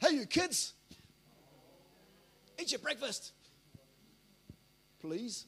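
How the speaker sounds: loud, manly, fatherly put-on dad voice. A father showing how he speaks when the kids play up, manly, fatherly voice. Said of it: "Just put on the manly, fatherly voice".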